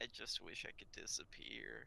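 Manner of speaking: mock sad dejected tone. Retelling what he said after everyone ran out of the classroom, imitating a sad, dejected tone. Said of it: "in that tone".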